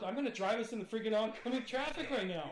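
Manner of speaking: threatening, menacing voice.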